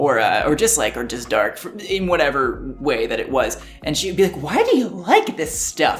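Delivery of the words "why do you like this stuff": horrible, bad, sing-song put-on voice. Recalling a question mom always asked, imitating a mom's voice. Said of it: "That was a horrible impression of my mom".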